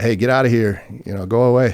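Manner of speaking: loud yell, called out. Retelling a grizzly bear encounter, imitating the man with him yelling at it. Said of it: "he's kind of yelling at".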